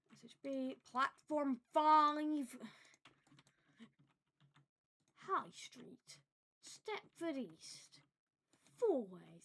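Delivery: booming, loud platform tannoy announcer, "five" drawn out. Speaker rattling off platforms and stops, imitating station announcements. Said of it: "I don't know why I'm imitating announcements".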